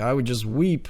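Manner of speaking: ordinary delivery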